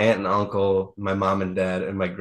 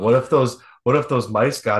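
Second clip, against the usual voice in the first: put-on half-laughing delivery, giggles breaking in; 3 semitones higher, 4 dB louder than usual. Retelling what a man said in the car near home, imitating chuckling while talking. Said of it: "he just starts chuckling".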